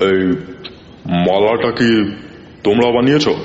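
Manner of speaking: heavy, weighty voice. Narrator reading an old man's question to his family, in a heavy voice. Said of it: "ভারী গলায় জিজ্ঞেস করলেন".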